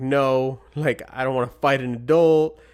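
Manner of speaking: acted-out childlike crying. Retelling being a third grader confronted by an adult: imitating own bawling. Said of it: "I just start bawling".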